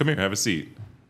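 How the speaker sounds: firm, summoning parent tone. Retelling his dad calling him to the table: imitating dad's parent tone. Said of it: "when parents talk to you in that tone".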